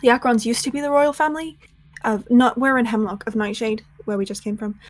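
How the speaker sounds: quiet hushed whisper. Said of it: "will lean in a little bit to whisper in, like, a more hushed tone".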